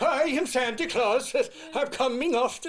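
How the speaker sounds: put-on Swedish accent, high and slow. Imitating Ed Asner's Santa from Elf: put-on Swedish accent. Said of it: "I thought he was Swedish".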